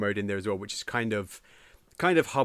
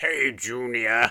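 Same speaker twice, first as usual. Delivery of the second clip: smoky villain voice like a heavy chain-smoker. Imitating a game villain greeting his son: Bowser's Super Mario Sunshine voice. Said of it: "his Super Mario Sunshine voice".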